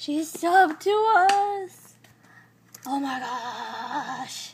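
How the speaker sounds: delighted, very slow, "gosh" stretched out. Finding out someone subscribed to the channel, so excited. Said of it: "I'm so excited!".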